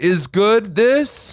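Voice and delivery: very high, loud broken English. Mocking how the dad spoke to a waiter, imitating broken english. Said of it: "spoke to the waiter in broken English".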